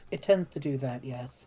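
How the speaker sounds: very slow, low mutter under the breath. Voicing a character who replies under their breath: muttered under the breath. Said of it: "Chris under their breath".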